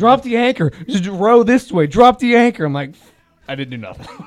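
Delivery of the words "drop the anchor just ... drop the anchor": mock yelling, high-pitched. Retelling being yelled at on a boat on a churning day, imitating Jay yelling. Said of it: "Jay just fucking yelling at me".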